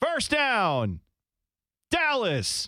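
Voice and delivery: high-pitched, unhurried sports announcer voice. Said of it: "he'll say".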